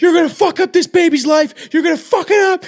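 shrill, very high-pitched screaming rant. Retelling a movie scene of a character screaming into his phone: imitating Seth Rogen screaming. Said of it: "screaming into his phone about it".

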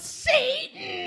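mock yell, way up high, not shrill.

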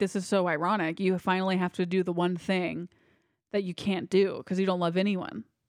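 ordinary talk

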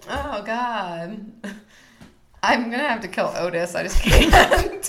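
laughing while talking. Playing a pick-one game about wrestlers with a co-host, laughing. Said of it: "Why are you laughing?".

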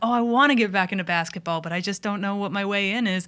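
usual speaking voice

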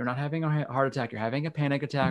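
ordinary delivery

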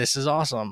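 ordinary talk

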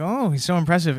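ordinary delivery

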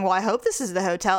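ordinary delivery

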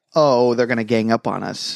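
ordinary talk

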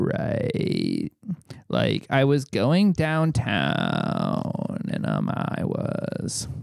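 hard, heavy, creaky vocal fry. Showing how he wants people to talk, in a hard vocal fry. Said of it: "saying right with a hard vocal fry".

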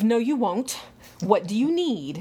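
mock commanding, overbearing, domineering tone. Recalling a New Year's Eve visit, quoting him in a domineering voice. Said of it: "he had a very domineering voice of".

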